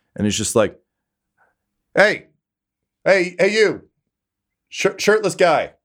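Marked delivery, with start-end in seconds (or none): 2.0-5.7 yelling, much higher and slower. Narrator voicing a rider on his horse calling to a shirtless Atticus, yelling across a crowd. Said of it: "he actually yells like across the crowd".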